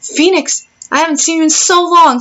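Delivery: high, thrilled, excited and eager tone. Streaming from a boyfriend's house, greeting phoenix on arrival with an excited greeting. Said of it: "I just got so excited".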